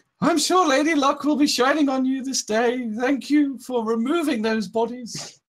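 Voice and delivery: very high, really weird voice. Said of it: "my really weird voice that I did last time, so I gotta carry it on".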